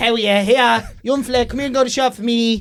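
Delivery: put-on broad Dublin accent. Doing a character based on a woman from around the corner: broad dublin voice. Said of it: "she's real Dublin".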